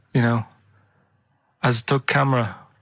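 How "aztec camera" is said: fake German accent, man's voice. Explaining a pun by voicing how a German man would say it, put-on German accent. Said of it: "the way he'd say it, he'd be like".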